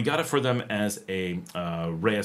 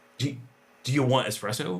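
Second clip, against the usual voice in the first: all-excited, eager voice; 3 semitones higher than usual. Retelling a daughter offering espresso in the morning: imitating excited daughter. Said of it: "she's all excited".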